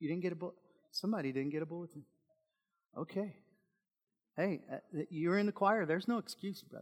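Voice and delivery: light, jokey, playful teasing tone. Handing out bulletins, speaking to a choir member who didn't get one, teasing. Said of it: "I'm teasing you".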